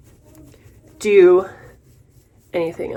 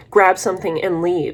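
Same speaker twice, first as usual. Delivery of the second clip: ordinary talk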